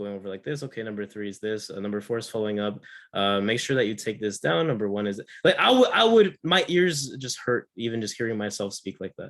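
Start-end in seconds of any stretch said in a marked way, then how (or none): 0.6-5.2 flat, level, lifeless droning monotone. Presenter showing an audience how a dull presentation sounds, monotone. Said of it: "if I was just like monotone the whole time".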